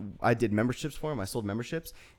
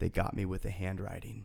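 put-on raspy, rough, creaky man's voice; 3 semitones lower, 7 dB quieter than usual. Retelling a man talking to himself in a bathroom, in a raspy voice impression. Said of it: "I'm trying to do his raspy voice".

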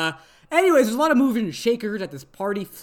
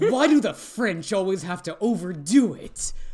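mock bitter, angry, rage-fueled, snide tone. Retelling rio's comment about the french: imitating a rage-fueled comment. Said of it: "this shitty comment fueled with rage of".

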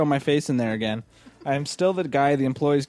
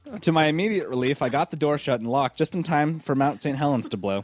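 ordinary talk, nothing marked

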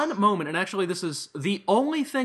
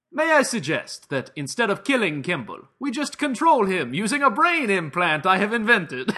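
bad, terrible put-on Italian accent. Quoting a favorite line from a movie, in a terrible italian accent. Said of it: "I will try to do it in the terrible Italian accent".

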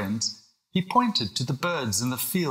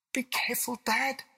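very high, soft, hushed half-whisper; 11 semitones higher, 6 dB quieter than usual. As his dad steps up to the cupboard door, the child speaks: half-whispering. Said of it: "whispered William".

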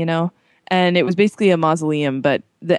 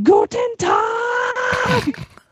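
very high-pitched, bursting exclamation. Retelling a fake cereal commercial where a pianist bursts in: imitating Johannes Brahms in a commercial. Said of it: "this guy on a piano bursts in the wall, and he's like".

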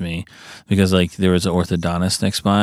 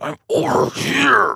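cross, very high, creaky under-the-breath angry undertone; 13 semitones higher than usual. Retelling how her mom called out from a random spot, imitating an angry undertone. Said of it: "the angry under her toned voice".

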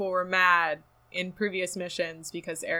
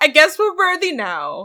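sassy, very high, loud, with big pitch swoops; 10 semitones higher, 12 dB louder than usual. Retelling a game scene where Ghost responds: mock sassy Ghost voice. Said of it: "Ghost is sassy".

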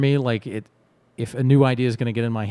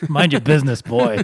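loud put-on grandfatherly old man voice; 4 semitones higher, 6 dB louder than usual. Speaker retelling their grandfather's answer to a question, imitating their grandfather. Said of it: "I was saying my impersonation".

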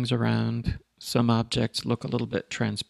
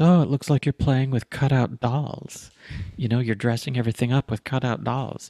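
snide, sarcastic, mocking tone; 4 dB louder than usual. Quoting someone's remark about their image work, mock-sarcastic quote. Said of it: "rather sarcastically say to me".

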